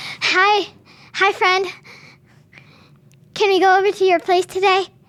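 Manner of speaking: eager, puppyish, all eagerness. Imitating a friend who keeps asking to hang out: imitating an eager golden-retriever-like friend. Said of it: "kind of like a golden retriever as a human".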